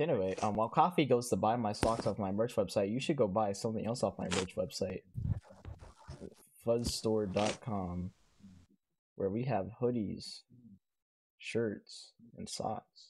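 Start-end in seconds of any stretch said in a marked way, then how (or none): 6.7-13.1 slow, soft, flat robotic voice. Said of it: "say it like a fucking bot".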